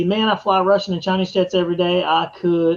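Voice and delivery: ordinary talk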